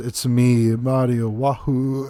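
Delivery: very slow, dragged-out, low-energy voice. Retelling a kiosk clip as evidence: shortened, unenergetic Mario voice. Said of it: "in a very, like, shortened voice".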